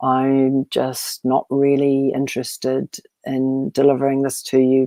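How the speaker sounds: flat uninterested voice. Demonstrating the voice to avoid when presenting, bored monotone. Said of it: "speak in a monotone sort of".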